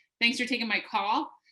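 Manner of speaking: upturned, rising ending on "call". Imitating a caller's unconfident phone intro, rising end on my call. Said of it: "she was going up at the end of her sentences. So something like this".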